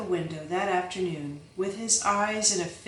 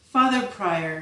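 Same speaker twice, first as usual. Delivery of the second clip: plain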